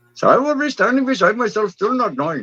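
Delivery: put-on Indian accent.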